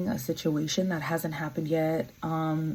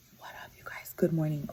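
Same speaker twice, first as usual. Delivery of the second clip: hushed whisper. Greeting viewers in the morning with two kids on the bed, whispering. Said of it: "the reason why I'm whispering".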